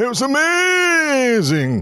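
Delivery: put-on Yorkshire voice, very high, amazing stretched long. Doing an impression after being asked to do Pink again: Pink impression. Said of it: "go do your Pink impression again".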